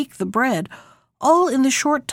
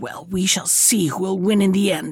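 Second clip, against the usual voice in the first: in a great rage, furious, much lower pitch; 3 semitones lower than usual. Narrator reading the witch's threat to the girl, in a great rage. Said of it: "said the witch in a great rage".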